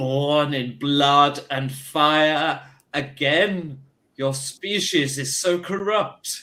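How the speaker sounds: resounding, disembodied booming voice, fire drawn out. Game master voicing an unplaceable voice that all the players hear, booming voice. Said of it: "You hear a booming voice".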